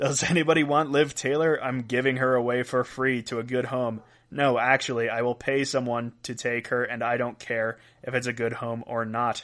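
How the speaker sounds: ordinary delivery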